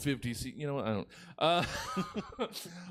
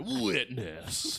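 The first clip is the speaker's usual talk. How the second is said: dramatic trailer narrator voice. Imagining a new way to watch Fury Road: movie trailer guy voice. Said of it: "It's a movie trailer guy".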